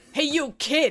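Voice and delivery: put-on Brooklyn accent.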